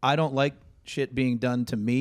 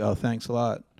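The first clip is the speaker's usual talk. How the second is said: mock muttered aside, lower pitch; 3 semitones lower than usual. Acting out a remark to someone who didn't hold the door: imitating muttering under breath. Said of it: "throw it out there under your breath like".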